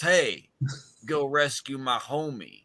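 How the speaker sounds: hillbilly-style voice. Retelling a show's plot, voicing a character hailing the heroes in a put-on redneck voice. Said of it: "you sound very redneck right now".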